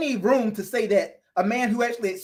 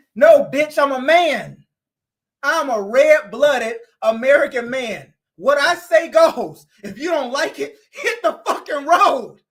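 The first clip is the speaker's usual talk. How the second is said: put-on worked-up, loud, heated, angry tirade; 4 semitones higher, 5 dB louder than usual. Acting out a man who pays all the bills, in a mock-heated rant. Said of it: "let me calm down".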